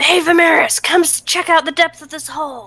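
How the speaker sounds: whispered shout. Calling over to Vimeris, in a trademark whisper yell. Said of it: "in my trademark whisper yell".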